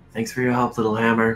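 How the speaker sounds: speaking in a whisper. Riding past an ally in character, thanking him quietly: whispering. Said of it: "I wanna whisper off to the side".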